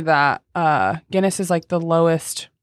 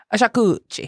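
put-on Italian guy accent; 4 semitones higher than usual. Saying the word to another speaker, like the Italian dude in Eurotrip. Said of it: "Why did you remind me of the Italian dude in Eurotrip?".

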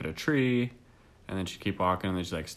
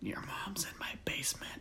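hushed, slow, drawn-out creepy whisper; 8 semitones higher, 12 dB quieter than usual. Saying the creepiest thing one can think of: whispering for creepiness. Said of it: "I don't think you need to whisper that".

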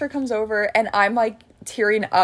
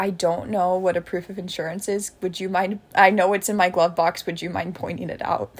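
usual speaking voice

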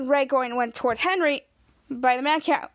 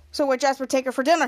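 ordinary talk, nothing marked

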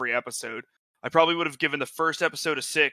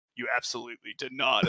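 put-on very evil tone, lower and quieter; 2 semitones lower, 4 dB quieter than usual. Recounting a scene, voicing the woman's reply to her underling in a very evil tone. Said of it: "And like a very evil like tone".

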